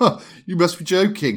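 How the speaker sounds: acted laugh. Retelling a shop manager's answer to the speaker's sister, retelling a laugh. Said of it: "he looked at her and laughed".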